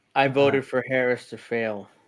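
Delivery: normal talking voice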